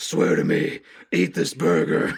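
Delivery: superhero voice, very low, slow and rough. Joking along in the voice just named: Batman voice. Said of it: "Batman voice".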